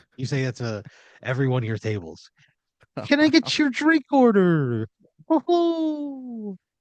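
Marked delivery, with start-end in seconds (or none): 3.1-6.6 put-on very high, slow Irish accent, "ho" stretched out. A server at Lucky Saloon takes a table's drink order, in a high-pitched Irish accent. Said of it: "you do like a a high pitched".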